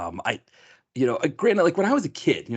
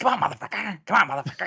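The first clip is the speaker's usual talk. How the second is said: rough punk-style yelling; 8 semitones higher than usual. Retelling a chase scene, yelling at the man being chased: C. Thomas Howell raspy punkish yelling. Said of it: "raspy, like, weird, like, like, punkish voice, like, yelling".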